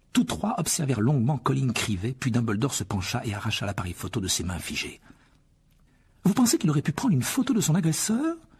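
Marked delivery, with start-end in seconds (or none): 6.3-8.4 rushed, very high-pitched, hurried delivery. Looking at a frozen boy's camera, a professor asks the headmaster, hurried. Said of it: "demanda précipitamment le professeur McGonagall".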